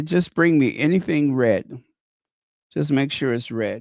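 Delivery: ordinary talk, nothing marked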